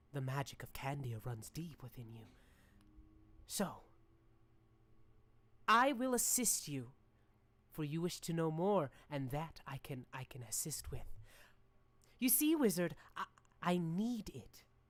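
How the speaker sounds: tiny little fairy voice. Voicing a tiny fairy who asks the wizard for help: tiny fairy voice. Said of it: "And she says".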